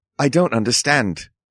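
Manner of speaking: put-on New Zealand accent, phone voice. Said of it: "the multiple accents that I threw out".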